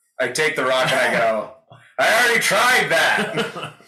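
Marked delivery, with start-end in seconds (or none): 2.0-3.7 very high, loud, all-out yell. Playing a character shouting back through a portal: shouting really loud. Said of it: "Really loud".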